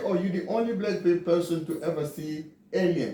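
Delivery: ordinary talk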